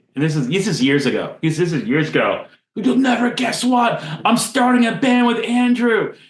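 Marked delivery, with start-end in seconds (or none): 2.8-6.1 play-acted high-pitched gush, bubbling over with excitement. Retelling how a friend announced starting a band: imitating Alex's excitement. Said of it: "He's so excited".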